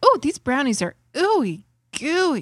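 earnest, gushing glee. Imitating a baking show judge praising brownies: imitating giddy delight. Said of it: "with a little giddiness".

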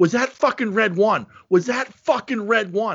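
restrained, held-down mild yell. Retelling watching a scene, re-enacting screaming at the tv. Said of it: "I'm screaming this at the TV".

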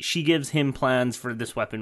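ordinary talk

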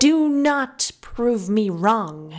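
sharp, pointed, cutting tone. Addressed as Your Majesty, she answers Fingal sharply. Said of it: "she said sharply".

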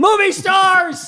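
very high, loud, blurted-out screamed cry. Recalling watching a movie, retelling screaming out at the screen. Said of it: "I screamed out".

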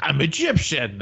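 put-on Scottish-accented speech. Quoting a movie character who claims to be Egyptian: Sean Connery voice. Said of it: "You sound like Sean Connery".

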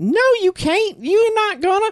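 very high-pitched woman's voice.

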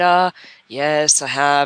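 mournful, very slow, dragged-out, really sad voice. Retelling how people answer about Facebook ads: imitating a sad-sounding voice. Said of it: "they had this really sad, sad sounding voice".

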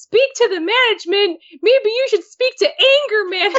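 put-on squeaky, very high tiny child voice. Retelling Pajamas's reply to a customer yelling on the phone, in her tiny child voice. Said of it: "like, tiny child voice".

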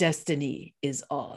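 low, hushed, barely voiced put-on voice. Quoting what Uhtred says at every entrance, in an Uhtred impression. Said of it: "Can you just do it again in that same voice?".

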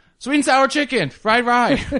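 mock very high, blurted, blaring shriek. Retelling how the same girl looked right at them and screamed out the order, imitating her screaming. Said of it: "she just screams out".

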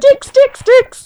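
high squeaking mouse voice. Contrasting with the co-host's radio-host voice, the speaker does a squeaking mouse voice. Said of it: "squeaking mouse coming in and going".

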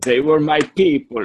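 vampire character voice. Talking about a panel, a speaker slips into a put-on voice: the Count voice. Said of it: "Why am I doing the voice?".

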